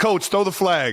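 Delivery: high, pleading, insistent voice. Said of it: "some guys would be like".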